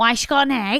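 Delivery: put-on plain, straight delivery in Scouse Liverpool accent. Retelling what one of the lads asked: Scouse accent. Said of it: "in a Scouse accent asking".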